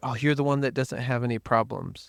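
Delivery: ordinary talk, nothing marked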